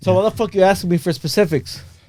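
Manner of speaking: aggressive, hostile tone. Answering friends who keep asking for an example: aggressive. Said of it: "why are you so aggressive, dude?".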